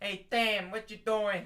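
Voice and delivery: loud, played-up put-on Midwest Chicago accent. Repeating the joke greeting with a name: put-on Chicago accent. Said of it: "That's more like a Chicago".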